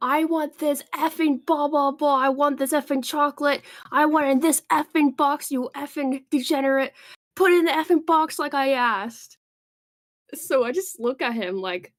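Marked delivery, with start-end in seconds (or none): 0.0-9.4 mock furious, high, angry yelling rant. Retelling a customer insisting on a box: imitating someone yelling angrily. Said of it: "to yell at me and go".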